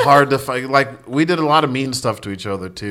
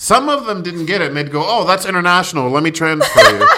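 ordinary talk, nothing marked

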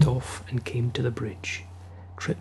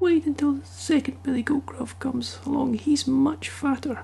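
tiny, very high little-goat voice; 13 semitones higher than usual. Narrator reading a fairy tale, the littlest billy goat answers the troll; small billy goat voice. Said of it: "the littlest billy goat [name], ... said the billy goat with his small voice".

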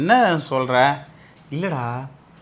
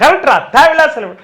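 high, loud shout at the start. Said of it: "first கத்தி சொல்லிடுற".

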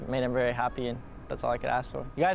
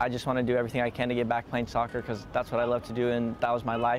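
plain

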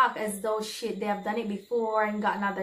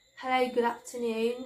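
put-on British accent; 2 semitones higher than usual. Retelling what an older lady said at the poolside: imitating a British accent. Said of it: "'cause she's British".

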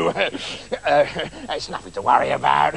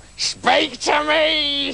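very high cackling voice; 11 semitones higher than usual. Reading a story aloud: the mother waiting at the door greets her daughter, cackling. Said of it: "she cackled".

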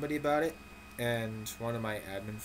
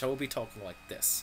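put-on, fake British English accent; 4 dB quieter than usual. Showing how talking british would sound: put-on british accent. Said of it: "If I was being British".

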